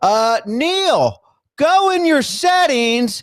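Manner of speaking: very high, very slow, drawn-out loud yell. Retelling how someone yelled instructions to a guest who couldn't hear: imitating Chris yelling. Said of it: "So Chris starts yelling".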